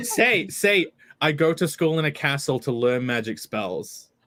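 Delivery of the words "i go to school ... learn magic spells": ordinary talk, nothing marked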